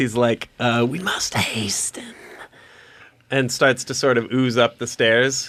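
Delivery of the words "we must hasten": soft, breathy whispered voice. Retelling a story, quoting what he said: telepathic mental voice. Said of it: "in his like mental mental voice".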